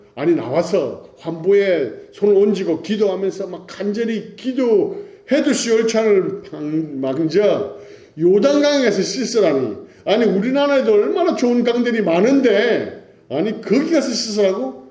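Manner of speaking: angry, indignant tone.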